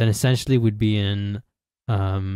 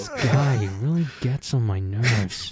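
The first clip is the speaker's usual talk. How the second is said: put-on American accent; 2 semitones higher than usual. Imitating a classmate at the back of the class: put-on american accent. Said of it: "is that your American accent?".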